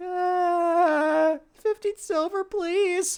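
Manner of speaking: very high, hesitant, nervous little gnome, uh stretched. Narrating a game, voicing the gnome shopkeeper to a buying player: nervous little gnome voice. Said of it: "and you see at the front there's like what looks to be a very nervous looking little gnome who's just like, / like the gnome is like a very nervous wreck. / He's just he's just doing these noises. / l".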